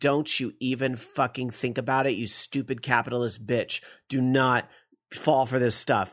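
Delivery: ordinary delivery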